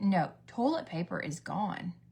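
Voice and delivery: ordinary delivery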